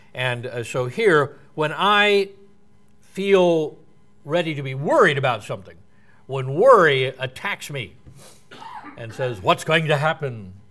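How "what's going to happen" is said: put-on creepy, spooky, mock-menacing voice. Speaker acts out worry talking to them, in a put-on scary voice. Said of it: "Uses scary voices like that".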